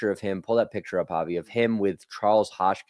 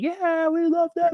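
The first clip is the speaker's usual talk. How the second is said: high-pitched screaming like a crowd. Retelling how the crowd reacted to a question: imitating a screaming crowd.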